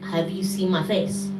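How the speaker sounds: normal talking voice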